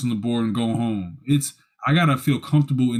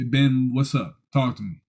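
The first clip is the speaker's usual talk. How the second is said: normal talking voice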